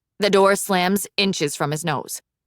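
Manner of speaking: ordinary delivery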